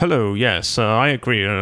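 very serious, stiff, low put-on business voice. Mocking how people talk on business calls, in a mock-serious business voice. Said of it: "they put on this like very serious".

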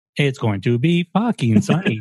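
flat machine-like voice. Friends joking about an app that reads the weather aloud, robot voice. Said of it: "it gets it to you in a robot voice too".

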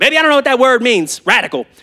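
put-on older Oklahoma woman voice. Speaker quotes an older woman from Oklahoma telling them their word, imitating Dee's Oklahoma accent. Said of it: "She's got this accent".

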